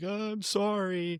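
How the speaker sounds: put-on high-pitched crying like a kid. Recalling being a kid stuck in a snowsuit, imitating own crying as a kid. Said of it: "I'm like crying".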